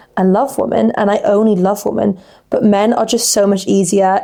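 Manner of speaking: usual speaking voice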